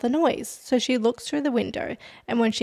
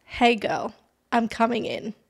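put-on creepy calm voice. Speaker retells what a man at the window said, in a creepy calm voice. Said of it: "in a creepy, calm voice".

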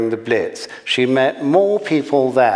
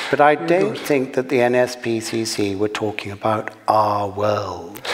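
plain reading voice

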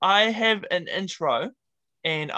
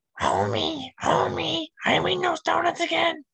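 very high cartoon voice with swooping pitch; 10 semitones higher than usual. Doing a voice for another speaker to guess: Marge Simpson voice. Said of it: "Marge Simpson".

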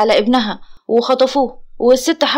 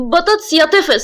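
annoyed, irritated, higher pitched; 4 semitones higher than usual. [name] speaks to Omar, who has nearly finished the food, annoyed. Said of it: "نور بضيق".

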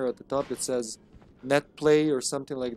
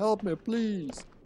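plaintive, sad, begging, pleading cry, higher; 7 semitones higher than usual. Describing an actor's sad ad-libs, imitating a sad old man's plea. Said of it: "Mark's ad-libs can be so sad".

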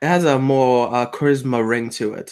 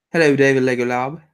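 fake British accent, fully committed. Greeting a viewer by name: put-on british accent. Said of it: "Really digging the accent".

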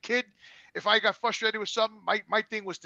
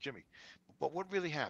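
mock very soft, calm, level, low voice; 4 semitones lower, 11 dB quieter than usual. Retelling how his brother answered his screaming phone call, imitating Anthony staying calm. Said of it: "he stays calm".

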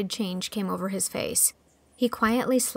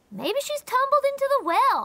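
very high, cheerful sing-song delivery; 3 dB louder than usual. A narrator reads Davy's suggestion during the search, cheerful. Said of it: "suggested Davy cheerfully".

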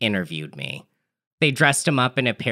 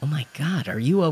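whispered, higher pitch; 4 semitones higher than usual. The narrator speaks to a drugged man jammed into the chair opposite, whispered. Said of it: "I whispered".

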